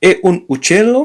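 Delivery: uccello with upward pitch. Showing learners how intonation turns a statement into a question, rising question intonation. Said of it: "So it is a question".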